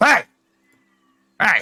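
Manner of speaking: very high, sing-song, swooping goblin voice. Player approaches an ogre in a game, looking up at him; goblin impression. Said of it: "doing my best goblin impression".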